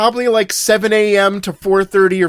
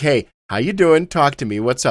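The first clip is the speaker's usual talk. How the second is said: usual speaking voice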